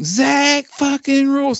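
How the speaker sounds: very high-pitched country twang. Arguing about the syllable count in a name, country twang accent. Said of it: "if you say it in a country twang".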